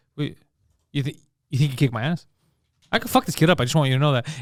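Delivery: low, dead-serious, straight deadpan put-on delivery. Retelling a guy offended by a compliment to a child: imitating a deadpan threat. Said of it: "And just straight face".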